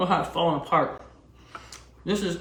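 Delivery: speaking through a mouthful. Speaker tastes the food they cooked and remarks on it, talking while chewing. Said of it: "can you see how easy I'm chewing?".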